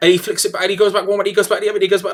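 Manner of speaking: fast, loud, rattled-off auctioneer patter. Describing deciding on the fly what needs saying: fast auctioneer style. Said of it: "so you don't get caught up going. ... it's in that uh, auctioneer style".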